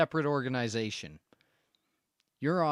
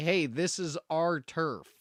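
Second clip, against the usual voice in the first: usual speaking voice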